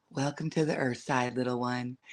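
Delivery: deepest dulcet, resonant, very low, soft voice. Retelling greeting a newborn baby, the speaker uses the lowest, dulcet, resonant tone. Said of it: "in the lowest, most dulcet, resonant tone".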